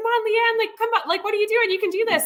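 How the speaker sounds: put-on, very high-pitched, encouraging yelled voice. Retelling how another athlete kept calling out on the run course: imitating someone yelling encouragement. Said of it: "She's still like".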